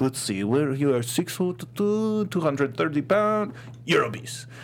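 put-on English spoken with an Armenian accent. Retelling what an Armenian man told you in his office, with a bit of Armenian accent. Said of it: "that bit of Armenian accent going on".

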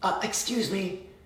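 high, sweetest, overly nice polite voice. Acting out asking a shopper blocking the aisle to move: imitating the nicest possible tone. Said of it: "you say in the nicest way possible".

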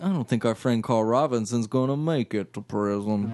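put-on molasses-thick southern accent and drawl. Recapping a scene, quoting what a man said, in a southern molasses voice. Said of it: "I got that southern molasses voice".

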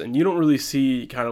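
normal talking voice

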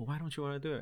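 quiet, hushed tone. Retelling a woman questioning his wife on the side, imitating her lowered voice. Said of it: "talking to my wife in a lower voice".

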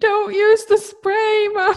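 play-acted shrill, very high scream. Mom retelling how her son yelled at her after a fall, retelling Eric's scream. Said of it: "Eric literally screamed at me".

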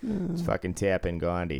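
put-on Boston accent. Joking about how a man named Tappan Gandhi might say his name, Boston accent. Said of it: "That was Boston".

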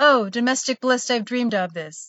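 mock deadpan, flat and even. Recounting a man told to order pizza, retelling his deadpan delivery. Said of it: "best deadpan deliveries".

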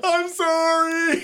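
piercing, very high-pitched, shrill scream. Retelling a wrestling chokehold, imitating someone screaming. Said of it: "He started screaming".

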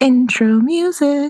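loud voice. Announcing the intro music, louder than usual. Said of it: "It was so much louder than it usually is".

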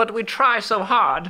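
very high-pitched put-on British accent. Imitating Excel fans reacting to a team ranking, in a British accent. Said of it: "Is that your British accent?".

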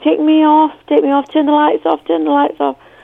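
play-acted high, tearful, frightened, crying pleading. Retelling being frightened under stage lights as a child: imitating own past crying plea. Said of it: "just started crying and saying".

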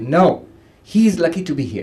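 sharply spoken. Retelling what a monk said in front of everybody, retelling a sharp reply. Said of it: "He said sharply in front of everybody".

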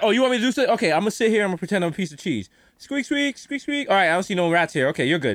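lazy, offhand, half-hearted dismissive tone. Acting out an exterminator who admits he does nothing: imitating a lazy exterminator. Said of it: "They're like".

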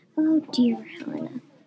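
whispering softly. A man, his smirk gone, speaks as the woman who snapped at him leaves, soft whisper. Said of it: "Philippe whispered softly".

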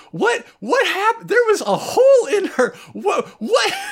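very high, loud, shrieking scream. Retelling an anime scene where Koichi is screaming: imitating Koichi screaming. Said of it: "Koichi's there screaming like".

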